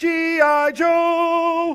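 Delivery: slow, high, loud, stretched-out announcer yell.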